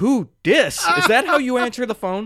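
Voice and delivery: high-pitched, indignant scolding mom voice. Retelling a movie scene, imitating a scolding mom. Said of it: "And his mom's like".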